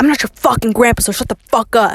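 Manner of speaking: mock-aggressive, imitated angry snap. Retelling what a man said to people before walking away, imitating an aggressive retort. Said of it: "he was so aggressive about".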